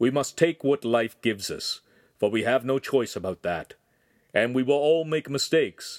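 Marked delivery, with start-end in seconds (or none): none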